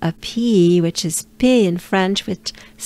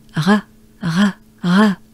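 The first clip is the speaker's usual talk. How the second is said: breathy French r sound. Showing a learner the breathy french r sound: french r with breath. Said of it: "it sounds like this".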